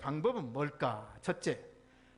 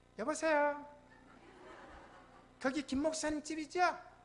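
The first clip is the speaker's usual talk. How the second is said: put-on female voice, quieter; 7 semitones higher, 3 dB quieter than usual. Retelling a prank call to his own home, the speaker is imitating a woman's voice. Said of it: "여자 음성을 내요".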